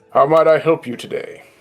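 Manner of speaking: character voice of stubbly cigar-smoking man. Voicing a cigar-smoking man who turns around in his chair: voicing a cigar-smoking human man. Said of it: "he just turns around and goes".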